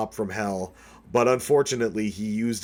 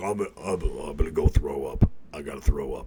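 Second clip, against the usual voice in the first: play-acted weepy, sobbing blubber in a crying voice; 7 semitones lower than usual. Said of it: "Alex Jones cried, and he's like".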